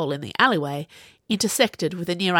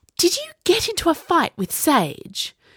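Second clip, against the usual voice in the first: very high, swooping, disbelieving, incredulous hiss; 11 semitones higher than usual. She asks another girl about a fight, an incredulous hiss. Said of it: "she hissed as if she couldn't quite believe it".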